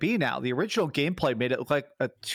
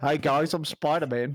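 put-on Australian accent. Joking about a game trailer character, talking like MVG. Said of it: "making him talk like M V G".

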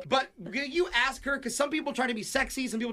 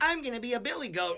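plain

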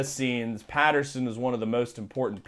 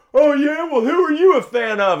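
very loud, very high, shrill taunting yell; 10 dB louder than usual. Retelling a Steelers fan a few rows back at a game: imitating a yelling Steelers fan. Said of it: "he's yelling like".

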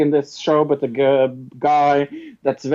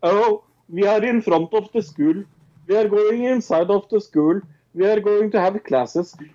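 mocking, stilted, Norwegian-accented put-on English; 5 semitones higher than usual. Speaker mocks how people on a Norwegian show talk, stilted Norwegian English. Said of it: "It's like they talk a little like this".

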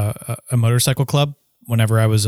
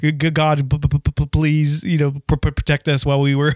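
put-on stammering speech, pitched higher; 3 semitones higher than usual. Retelling being asked to lead a prayer: imitating own stuttering prayer.

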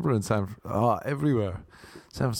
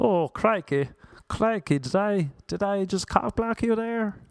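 put-on American accent, male voice; 9 semitones higher than usual. Speaker does their impression of an American guy: imitated American accent. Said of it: "this is my impression of an American guy".

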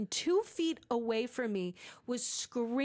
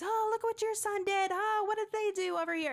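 mock, high, yelled call-out; 8 semitones higher than usual. Retelling what a loud parent at a game called out: imitating a parent yelling. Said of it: "she's yelling out at the other parents".

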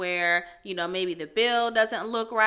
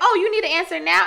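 startled, surprised oh at the start, caught off guard; 10 semitones higher, 8 dB louder than usual. Imitating a dad's usual reply when pushed to agree: imitating surprise. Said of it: "That's how he would say it every time".

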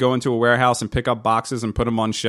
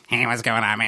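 mock croaky, froggy voice. Recalling a visit after a friend's tonsils came out, imitating Rich's froggy voice. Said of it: "Rich has got a froggy voice".

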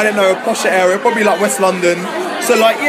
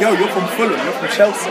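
plain

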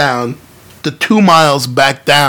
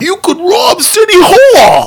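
put-on laid-on thick New York accent, very high, swooping; 3 dB louder than usual. Retelling a plot where a passing kid speaks, in the most new york accent ever. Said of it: "in the most New York accent ever".

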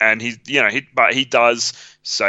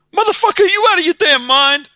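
very high, loud, sarcastic outburst; 5 dB louder than usual. Describing a film scene where cops shoot his vest, speaker does a mock-sarcastic Wesley Snipes outburst. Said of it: "he just like loses his shit at one point, but in like this sarcastic".

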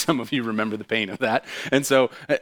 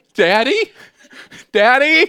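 shrill, very high, full-volume calling out; 11 semitones higher, 9 dB louder than usual. Retelling being lost among trees and calling for dad, retelling yelling for dad. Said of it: "I'm like yelling".

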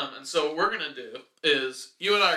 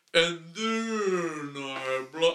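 dragged-out, odd slowed-down drawl. Explaining the rules of a speaking game, demonstrating a slow, low, weird voice. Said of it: "don't slow down like that, because then it just sounds like low, weird".

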